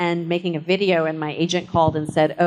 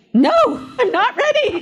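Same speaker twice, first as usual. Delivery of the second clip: shrill, panicked, very high hysterical screaming; 4 dB louder than usual. Recalling the dressing room right before starting, retelling a hysterical scream. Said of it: "I started screaming".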